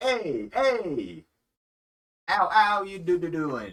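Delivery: shrill, high, booming robot voice, swooping wildly. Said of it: "I'm not gonna do his voice the whole time".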